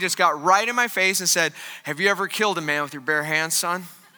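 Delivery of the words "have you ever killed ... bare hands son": mock-calm, very calm, much lower, quieter. Speaker retelling what a man said right in the speaker's face, imitating a very calm delivery. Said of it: "just said something very calmly".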